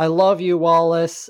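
weepy, tearful, crying voice. Retelling a movie scene where she cries: imitating someone crying. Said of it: "she's just, like, crying".

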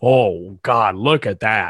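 very slow announcer voice, every word stretched. Imitating the commentator's reaction to the stare: Vince McMahon impression. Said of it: "that was a Vince impression".

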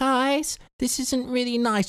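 very high-pitched, childlike put-on voice. Retelling answering British lads up north, in a high-pitched put-on voice. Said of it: "started talking in a high pitched voice".

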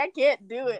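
imitated tearful crying voice. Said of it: "I remember you crying".

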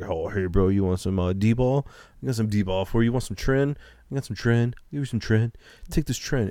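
pushy, hustling gym-bro voice. Imitating a dude at the gym selling steroids: imitating a gym steroid dealer. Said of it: "some dude in the fucking gym that has it in a gym bag".

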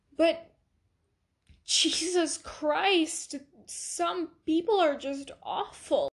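speaking while crying, tearful voice. Reacting to daily news stories, speaking while crying. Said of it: "Yes, I'm crying".

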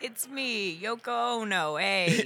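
put-on, mock Italian accent. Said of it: "making them Italian".

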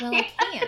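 quiet, sincere muttered delivery. Retelling a line from the episode: Alana muttering quietly. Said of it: "mutters so quietly".

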